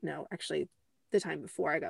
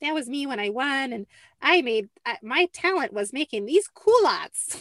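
put-on older woman voice, higher and louder; 6 semitones higher, 6 dB louder than usual. Retelling what an older woman said on stage, imitating Gladys's voice. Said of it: "I don't know why I did that voice".

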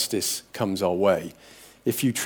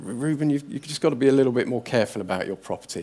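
put-on gracious, even-tempered, calm, quick; 3 semitones higher than usual. Retelling repeated warnings to him about dropping the bike, acting out speaking calmly. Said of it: "I said to him calmly".

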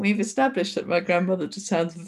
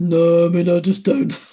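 bad, loud, deep, newly broken teenage voice; 2 semitones lower, 7 dB louder than usual. Speaker imitates a fifteen-year-old whose voice just broke: imitating a teenager's deep voice. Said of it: "Kind of deep".

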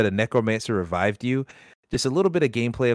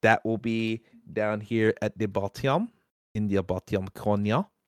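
put-on French accent, done badly; 5 dB quieter than usual. Speaker telling viewers where to find the link, bad french accent. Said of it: "I don't know why I said that in a bad French accent".

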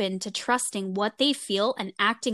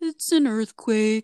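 dog given a speaking voice; 4 dB louder than usual. Speaker imagines the parents' dog talking, imitating the dog. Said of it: "he probably sounds more like".

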